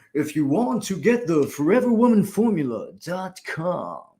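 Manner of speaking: poorly put-on swooping radio announcer voice. Host plugging her program to listeners, trying a bad radio host voice. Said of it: "maybe that wasn't a good radio host voice".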